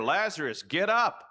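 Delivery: high, loud yelling.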